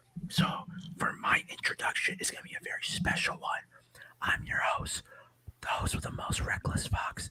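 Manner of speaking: hushed whisper. A podcast host introducing the show while a fiance sleeps nearby, whispering. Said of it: "why I'm whispering".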